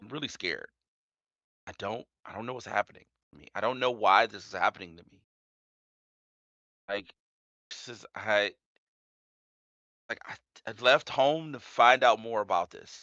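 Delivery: really soft, gentle, soft-edged voice. Narrating a scene to listeners and voicing a character, really soft. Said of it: "and then she like really soft".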